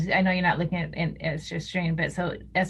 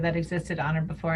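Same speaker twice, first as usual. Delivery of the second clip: ordinary talk, nothing marked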